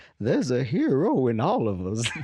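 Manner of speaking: put-on old woman's voice with lilting, sing-song pitch. Describing the old woman from the Spider-Man movies to a friend: Aunt May impression. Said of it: "She's like".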